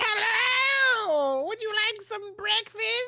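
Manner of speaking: put-on very high, drawn-out, slow old lady voice. Describing the old lady who greets you at Rita's: imitating an old lady. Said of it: "this old, like, lady, and she's just like".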